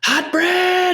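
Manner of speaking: acted out shout, very high and really loud. Describing the staff call-out when the bread is done, retelling a loud yell. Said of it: "and they yell it really really loud".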